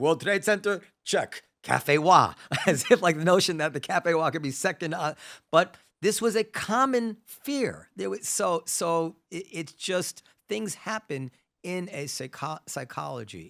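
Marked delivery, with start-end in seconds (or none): 0.0-2.3 teasing, loud put-on Arabic accent. Teasing nervous waitresses at the Cafe Wa, in a put-on Arabic accent. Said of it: "I would put on an Arabic voice".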